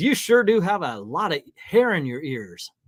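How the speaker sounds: fake, put-on down-home country accent. Retelling a remark a man made to them, in a put-on country accent. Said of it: "I don't know why I put on a country accent".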